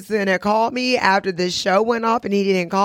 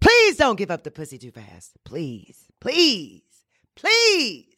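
put-on, repeated pleading with swooping sing-song pitch; 2 semitones lower than usual. Recalling begging a friend while on their knees; retelling own begging. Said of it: "I begged my friend".

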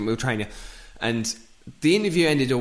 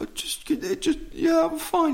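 mock crying, much higher. Retelling a crying man's answer when asked if he's alright, imitating someone crying. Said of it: "Mikey's just crying".

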